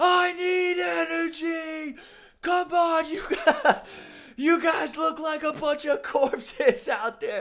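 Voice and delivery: very high, shrill scream, energy drawn out. Retelling how the director screamed at the crew during the shoot: imitating a director screaming. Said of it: "screaming at us".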